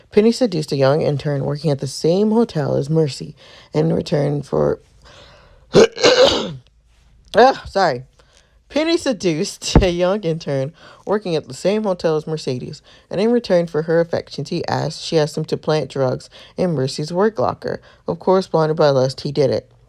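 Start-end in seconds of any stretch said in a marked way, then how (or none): 5.8-7.7 high, loud voice catching on a cough. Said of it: "my voice keeps doing this, like, weird thing".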